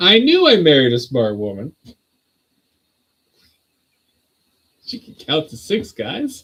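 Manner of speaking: loud, swooping voice, laughter barely held back. Teasing a spouse about counting chairs, holding back laughter. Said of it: "I'm trying so hard not to laugh".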